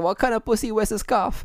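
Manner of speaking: high-pitched screaming, taunting. Recounting a segment to a listener, imitating Jericho screaming. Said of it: "he's screaming at MJF like".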